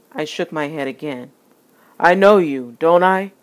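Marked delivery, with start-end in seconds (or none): 2.0-3.2 very loud, raised voice. A man asking for change rises and confronts the narrator, more loudly. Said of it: "he said more loudly".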